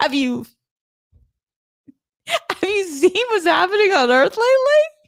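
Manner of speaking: laughing while talking. Reacting to a message just read aloud, laughing while talking.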